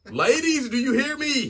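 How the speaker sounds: high, loud, rousing rallying call.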